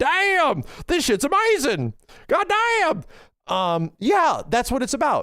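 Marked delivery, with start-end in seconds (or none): 0.0-3.0 very high, slow, drawn-out Southern exclamation. Acting out someone spotting a cheap game on sale, in a southern accent. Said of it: "a southern accent all of a sudden".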